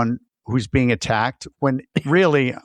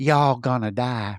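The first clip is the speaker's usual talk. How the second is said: put-on demon voice, Southern accent, slower. Describing a film's demons to another speaker, Evil Dead Southern demon voice. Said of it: "demons are from Tennessee, and they're like".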